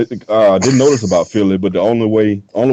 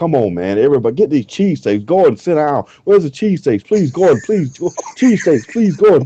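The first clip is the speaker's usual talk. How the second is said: high-pitched, frantic, panicked, desperate tone; 6 semitones higher than usual. Retelling waiting behind the wheel for the cheesesteaks: imitating own panicked pleading. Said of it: "just panicking".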